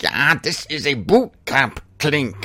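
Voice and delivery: put-on German officer accent. Retell what your late German friend used to tell you, in a Major Hochstetter voice. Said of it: "He would talk like a Major Hochstetter on Hogan's Heroes".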